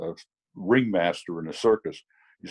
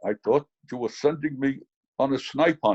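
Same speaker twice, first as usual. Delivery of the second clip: put-on full Austrian-accented English throughout; 4 semitones higher than usual. Retelling what Bernie said while looking at him, Bernie's Austrian accent. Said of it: "in this great Austrian accent".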